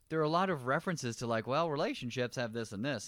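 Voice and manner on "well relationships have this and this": ordinary delivery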